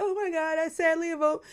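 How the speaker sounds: loud, very high voice, every word over-enunciated. Predicting what a houseguest named America will say: imitating America's loud voice. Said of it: "she'll be like".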